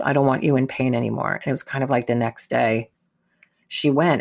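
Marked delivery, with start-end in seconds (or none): 0.0-1.3 imitated whispering. Retelling a goodbye to a dying mother in hospital: retelling a whisper. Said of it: "I whispered in her ear".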